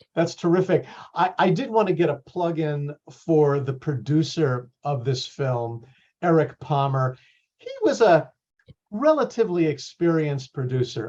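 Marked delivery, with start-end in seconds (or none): 7.5-11.1 dry, ironic, sarcastic tone with swooping pitch. Giving a plug for the film's producer, sarcastic. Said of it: "I'm being sarcastic".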